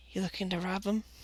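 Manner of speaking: very quiet, hushed, secretive, conspiratorial voice. Voicing people who lean closer to you, hushed so not to be overheard. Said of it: "try not to be overheard".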